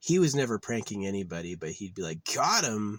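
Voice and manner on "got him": play-acted, knowing, dry, sarcastic tone. Imitating a buddy's joking catchphrase: imitating a friend, put-on sarcastic.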